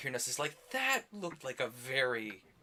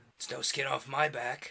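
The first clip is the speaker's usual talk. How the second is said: rough, gruff dragon character voice. Player voicing a dragon character during a game, pitched-down gruff dragon voice. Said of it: "he's like pitching his voice down".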